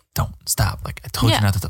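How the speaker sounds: put-on whisper. Retelling words someone whispered in another's ear: imitating a whisper. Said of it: "A whisper in his ear".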